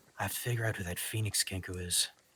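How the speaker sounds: muttering under the breath. In a role-play scene, a character speaks to himself, muttering under his breath. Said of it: "You hear him mutter under his breath".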